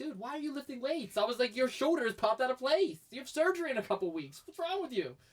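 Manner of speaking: high, disbelieving, incredulous tone. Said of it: "I'm like".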